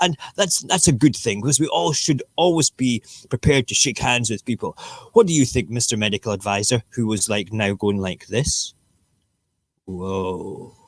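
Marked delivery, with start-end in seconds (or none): 0.0-6.8 acted British politician voice. Acting out a politician at a hospital podium: Boris Johnson impression. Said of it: "Let's do my impression".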